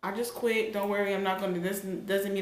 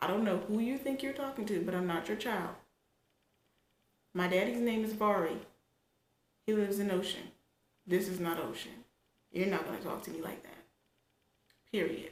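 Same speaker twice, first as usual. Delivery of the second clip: put-on stern, firm, no-nonsense, unbending tone; 3 dB quieter than usual. Retelling her reply to a supervisor who raised his voice: imitating her own stern reply. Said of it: "I said, just like this".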